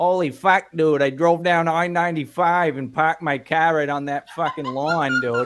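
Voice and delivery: loud, high-pitched northern Maine New England accent. Comparing Northerners and Southerners, imitating a northern accent from Maine. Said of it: "you got a northern accent in Maine where it's like".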